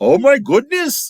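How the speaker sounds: put-on very high, loud Indian accent. Retelling what a startled woman in a sari said, in an Indian accent. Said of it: "in the Indian accent".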